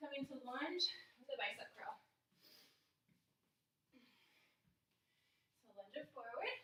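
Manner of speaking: breathing heavily. Leading a workout exercise while congested: breathing heavily. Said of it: "you can hear me breathing really heavy today".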